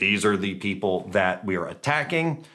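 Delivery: ordinary talk, nothing marked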